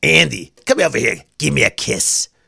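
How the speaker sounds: put-on old grandmother voice, Eastern European accent. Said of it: "She'd talk like that".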